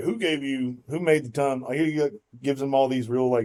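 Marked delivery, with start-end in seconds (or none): 0.0-1.6 mock-sassy tone, higher and slower. Retelling God's reply to Moses at the burning bush, as a sassy remark. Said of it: "sassy remarks".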